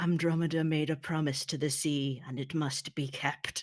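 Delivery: ghastly, horrific, bubbling, gurgling voice. He replies to a plea about their tragic lives, in a horrific bubbling voice. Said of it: "in this kind of horrific bubbling voice".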